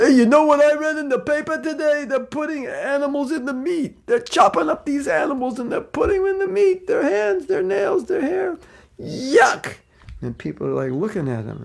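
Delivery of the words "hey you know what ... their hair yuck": put-on very high, loud, heavy, thick New York accent. Imitating a man who spoke up while waiting in line, thick New York accent. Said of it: "he had a thick New York accent".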